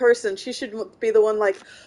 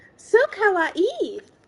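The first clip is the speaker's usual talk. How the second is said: put-on super annoying, shrill, very high anime girl voice; 9 semitones higher than usual. Announcing the bit first, the speaker does a super annoying Japanese girl voice. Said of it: "This is the super annoying Japanese girl voice".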